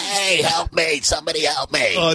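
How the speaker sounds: put-on ventriloquist-like voice from the throat. Act out him yelling for help, in a Steve-O voice, back of the throat. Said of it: "a ventriloquist thing in the back of your throat".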